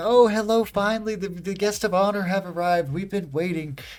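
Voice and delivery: put-on very high, loud, bright, cheery old-crone witch voice. Voicing a cheerful old witch greeting the arriving guests: cheerful old witch voice. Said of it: "she's like".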